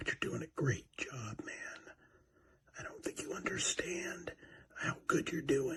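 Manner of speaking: very quiet, whispered encouraging tone. Speaking so nobody else can hear, whispering. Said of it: "I'm just gonna whisper this".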